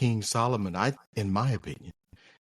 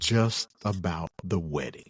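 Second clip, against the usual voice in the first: slow, measured, deliberate, drawn-out delivery; 4 semitones lower than usual. Repeating a point about women and weddings: slower delivery. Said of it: "I'll say it slower".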